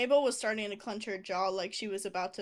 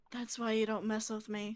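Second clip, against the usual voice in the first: whispering in an acted voice. Voicing a character who taunts after leaving a cell: whispering in character. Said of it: "I just whisper".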